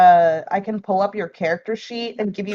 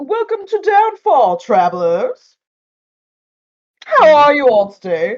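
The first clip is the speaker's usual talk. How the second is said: frog-like noble voice, high, swooping; 7 semitones higher, 3 dB louder than usual. Voicing a bullywug noble in powdered wig greeting travelers from a rowboat: bullywug noble speaking. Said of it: "one of them says".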